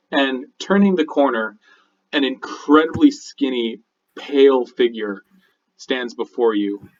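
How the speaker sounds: plain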